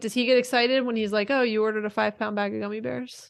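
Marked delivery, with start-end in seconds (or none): none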